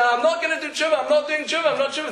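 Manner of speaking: very high, loud, frantic, desperate cry.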